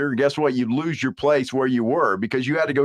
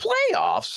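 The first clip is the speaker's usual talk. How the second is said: close voice impression, pitched very high. Doing an impression of Jim Moore saying one word. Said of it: "That sounded just like him, didn't I?".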